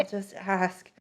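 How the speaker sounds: private, hushed half-whisper aside under the breath. Retelling a friend eyeing a kid's water bottle: imitating someone half-whispering to herself. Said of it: "whispering to herself".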